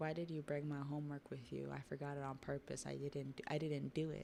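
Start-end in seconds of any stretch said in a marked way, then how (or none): none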